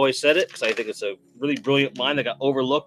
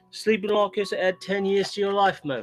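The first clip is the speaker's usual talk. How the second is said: fake Welsh accent with raised pitch; 6 semitones higher than usual. Doing a comic bit for listeners, in a put-on Welsh accent. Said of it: "this was my Welsh accent".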